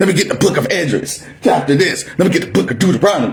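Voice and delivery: very fast imitated delivery. Imitating a man from the Watchmen of Israel citing scripture, fast verse-calling imitation. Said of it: "You gotta say it fast, like uh, like my boy off the Watchmen of of Israel".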